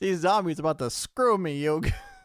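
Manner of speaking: loud, high-pitched put-on Brooklyn accent. Player complaining to an opponent during a game, in a Brooklyn accent. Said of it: "I'd apologize to the people of Brooklyn".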